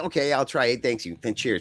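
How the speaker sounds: ordinary talk, nothing marked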